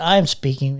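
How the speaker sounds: mock smug, self-satisfied delivery. Retelling what she said in a speech: imitating a smug tone. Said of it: "giving, like, this smug".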